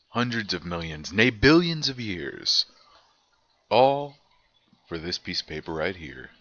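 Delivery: grand, dramatic put-on announcer delivery. Opening the evolution test review sheet in a dramatic announcer voice. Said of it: "That's it for my announcer voice".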